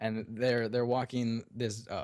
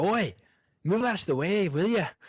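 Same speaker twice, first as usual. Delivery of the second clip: put-on loud, pitched-up dwarf character voice; 9 semitones higher, 6 dB louder than usual. Voicing a dwarf carrying a box past a player: dwarf voice. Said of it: "a voice coming from almost beneath you".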